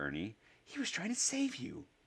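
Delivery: very high, swooping hissing voice. A narrator reading a character's line to another character, hissing. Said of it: "Neville hissed".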